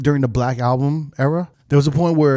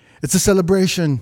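put-on Jamaican accent, pitched up, DJ hype style; 5 semitones higher than usual. Retelling what a DJ said on the mic: imitating a DJ's Jamaican accent. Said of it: "he said it in, like, a Jamaican accent".

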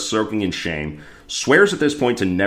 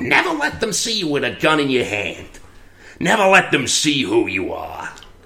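put-on higher-pitched, scrappy, young street-tough voice; 6 semitones higher than usual. Retelling a scene, a kid thanks Meyer with advice: 11-year-old street tough voice. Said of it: "here's my 11-year-old street tough voice".

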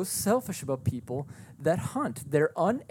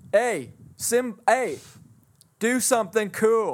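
acted heckling, taunting voice, higher and louder; 6 semitones higher, 6 dB louder than usual. Imagining a caged lion as a visitor with a hot dog calls: acting a zoo visitor taunting a lion. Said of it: "somebody's eating a hot dog. Looking at you going".

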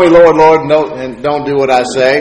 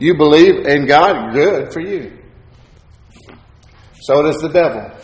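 heavily sarcastic, mocking, belittling delivery; 3 dB quieter than usual. Quoting a scripture line from James to a congregation, acting out a sarcastic quote.

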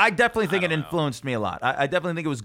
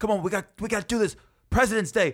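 mock cheerleader-style pep, hyped up; 6 semitones higher than usual. Recalling warm-up between commercials on Presidents Day, retelling cheerleader-style hype. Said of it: "I'm like a cheerleader".

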